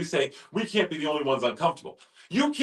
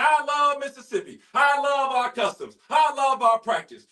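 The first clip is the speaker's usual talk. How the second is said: put-on high screaming speech; 8 semitones higher than usual. Retelling a mayor's speech before state leaders: imitating Mayor Horn screaming. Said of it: "and he's screaming".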